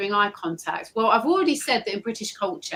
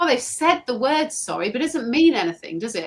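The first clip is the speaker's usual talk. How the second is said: plain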